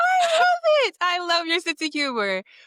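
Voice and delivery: high, loud, delighted joyful cry.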